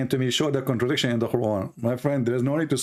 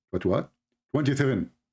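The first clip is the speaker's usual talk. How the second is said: usual speaking voice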